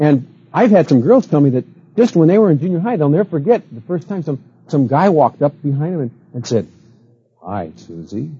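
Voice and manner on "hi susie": very deep, very quiet, hushed male voice. Retelling how a guy greeted a junior-high girl from behind: imitating a guy's low voice. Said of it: "with that low voice".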